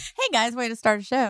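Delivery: talking through helpless laughter. Opening a live radio show after a mistake, laughing while talking. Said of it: "I'm laughing so hard I can't even talk".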